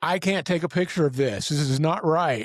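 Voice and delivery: mild, held-in, frantic screaming yell. Retelling being surrounded by Muppets at the desk, reenacting own screaming. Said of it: "And I'm screaming".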